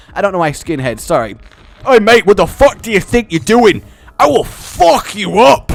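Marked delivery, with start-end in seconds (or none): 1.9-5.7 loud, raised, aggressive, menacing voice. Voicing a skinhead in the game: aggressive skinhead voice. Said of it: "as long as you say mate aggressively enough".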